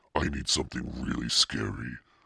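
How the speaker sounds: plain reading voice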